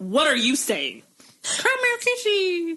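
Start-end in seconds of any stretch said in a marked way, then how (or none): 1.4-2.8 very high-pitched, squeaky voice. Imitating how a friend talks when excited: imitating Alexis. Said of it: "'cause Alexis has got that, like".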